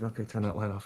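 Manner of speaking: soft, hushed stage half-whisper. Recalling a quiet instruction to his gaffer about a light; retelling a half-whisper. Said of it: "I remember just like whispering to my gaffer".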